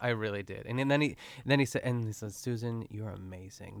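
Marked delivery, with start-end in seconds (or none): 2.3-3.8 earnest, heartfelt, said with total conviction. Retelling a charming character's praise of Susan: imitating a character's convinced tone. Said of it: "the conviction in his voice".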